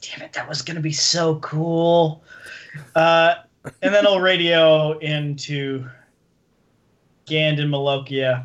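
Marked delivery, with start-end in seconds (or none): 0.0-2.2 under-the-breath stage whisper. Describing a game scene where nothing happens: half-whispering under his breath. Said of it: "Gareth will whisper under his breath".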